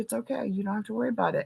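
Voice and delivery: mock-calm, relaxed voice. Retelling standing up for him and screaming for the teacher, speaker is imitating him being very chill. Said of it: "he was very chill and he was like".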